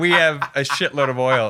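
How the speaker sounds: ordinary delivery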